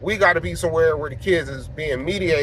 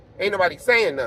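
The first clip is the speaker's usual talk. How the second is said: ordinary delivery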